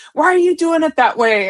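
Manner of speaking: mock screaming tossed out lightly, loud. Retelling a coworker screaming at him across the kitchen, imitating the screaming. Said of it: "he's screaming at me across from the kitchen".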